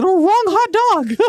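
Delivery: very high-pitched, slow cartoon voice. Joking what Mickey Mouse would say: Mickey Mouse voice. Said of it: "Mickey Mouse will be like".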